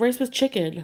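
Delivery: put-on grumpy, defensive, mildly angry tone. Retelling a man's reply to the speaker's question, mock-angry answer. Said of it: "he was kind of angry in his answer".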